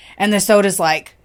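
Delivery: ordinary talk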